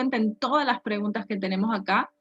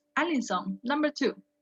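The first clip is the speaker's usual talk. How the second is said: ordinary talk, nothing marked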